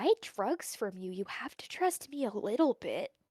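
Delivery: barely audible, very quiet hushed whisper. Voicing Jesse leaning down to Locke's ear: whispering very quietly. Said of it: "whispers into Locke's ear, like, very quietly".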